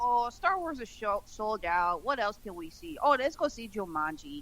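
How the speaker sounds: put-on regional Minnesota accent. Imitating moviegoers at a sold-out theater: imitating moviegoers in an accent. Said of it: "I don't know where that accent came from".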